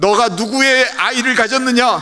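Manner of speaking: high, loud shouting in women's voices.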